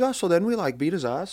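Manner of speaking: very high, put-on Canadian accent. Retelling how a boarding school classmate told his gang stories, imitating a Canadian accent. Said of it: "he would talk like a Canadian".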